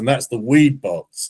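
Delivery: put-on real Southern US accent. Retelling the car seller showing the glove box, Southern accent. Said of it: "he's got this real southern accent".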